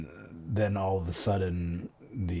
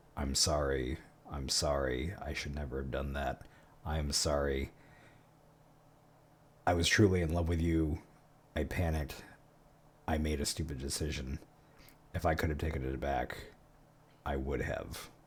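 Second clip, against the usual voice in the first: hushed whisper gradually swelling louder; 4 semitones lower, 5 dB quieter than usual. Voicing a tearful professor apologizing to a ghost: slow whisper growing louder. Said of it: "in a real slow whisper as it gets louder and louder".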